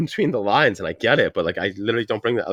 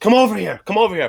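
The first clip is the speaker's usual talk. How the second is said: mock, very high-pitched holler; 10 semitones higher than usual. Retelling calling the barking dogs in the yard at night, retelling yelling at dogs. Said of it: "I'm yelling at the dogs".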